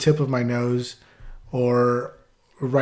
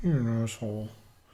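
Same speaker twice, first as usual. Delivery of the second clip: soft mumble, barely let out, under the breath; 7 dB quieter than usual. Retelling a story where a boy gets pushed around, imitating Horace mumbling. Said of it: "like mumbles it".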